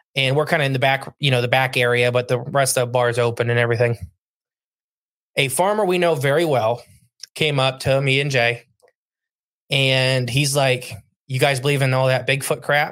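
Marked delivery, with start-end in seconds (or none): none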